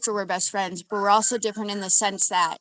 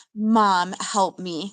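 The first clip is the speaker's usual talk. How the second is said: playful, pleading tone through laughter. Retelling how a daughter ran in asking for help: imitating someone laughing while pleading. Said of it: "but she's, like, laughing".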